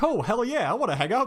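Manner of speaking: very high cartoon character voice, tossed off. Describing a scene from a show: imitating Sonic. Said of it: "Sonic is just like".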